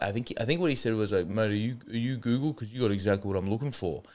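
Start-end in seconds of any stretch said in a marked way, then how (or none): 1.3-4.0 acted-out slurred delivery. Retelling what a stranger came up and said; imitating slurred speech. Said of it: "slurred his way through".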